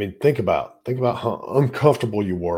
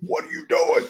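mock angry shout, restrained and mild. Retelling a video where one man yells at another, imitating a scream. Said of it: "he's screaming at him".

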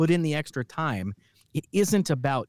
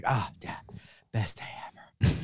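mock half-whispered, breathy, exhausted child voice; 4 semitones lower, 6 dB quieter than usual. Retelling a radio commercial's first take: imitating an exhausted kid. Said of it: "he's exhausted".

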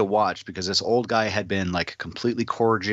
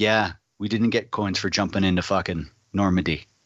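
icy, stone-cold, deep low voice. Retelling what an old guy said: imitating his stone-cold lower voice. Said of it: "his voice changes like 16 octaves, like lower".

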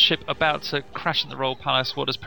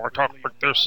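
put-on robot voice. Comparing how a voiced character sounded in two versions: Triclops robot voice. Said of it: "that almost generic Triclops robot voice".

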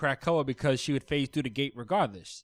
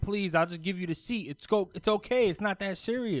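mock pleading screams, higher pitched; 6 semitones higher than usual. Recapping a scene, acting out a trapped character screaming to save her pet. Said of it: "she's screaming like".

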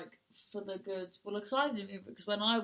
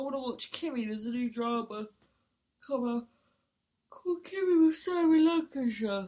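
words stretched out through a loud yawn; 4 semitones higher, 7 dB louder than usual. Naming a new drama to watch, yawning while talking. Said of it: "You're not bloody yawning whilst talking about it".

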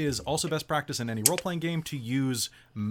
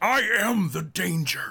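put-on tiny creature voice, higher and louder; 5 semitones higher, 5 dB louder than usual. Imagining a very small creature voiced by Bryan Cranston: Bryan Cranston voice. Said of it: "something else that is voiced by Bryan Cranston".

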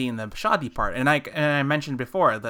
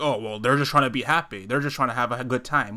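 normal talking voice

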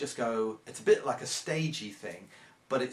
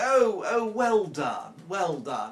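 put-on condescending, very drawn-out, slow sing-song tone; 6 semitones higher, 7 dB louder than usual. Retelling how a few people clapping sound: imitating a patronising tone. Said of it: "in that sort of patronising terms".

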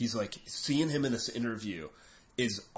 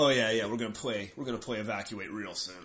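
mock sarcastic banter. Retelling a band member's old stage banter, mock-sarcastic stage banter.

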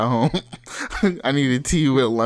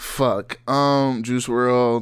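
ordinary talk, nothing marked

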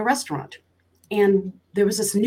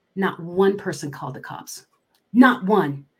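ordinary talk, nothing marked

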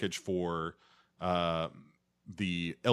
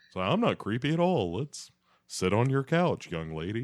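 sweet-talking, charming voice, pitched up; 5 semitones higher than usual. Speaker retells a man who claims to be a friend of a girl's dad, Hank voice. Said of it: "I don't know where this voice is coming from".

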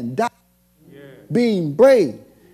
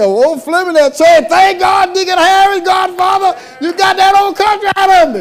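high, loud, excited shouted praise. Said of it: "And somebody may say".

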